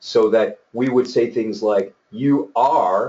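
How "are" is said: heavy stress on the word 'are'. Explaining how kids used to be praised, the speaker puts emphasis on 'are'. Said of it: "emphasis on the word are".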